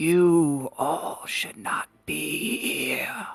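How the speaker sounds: raspy, airless, rasping voice. Narrating a game, voicing the creature as it approaches everyone: raspy, airless voice. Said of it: "say in a raspy, uh, airless voice".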